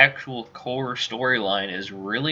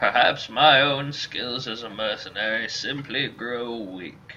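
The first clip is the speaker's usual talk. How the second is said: put-on default old man voice. Reading a mercenary character's lines aloud, in a Hapspur old man voice. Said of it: "that's my default old man voice".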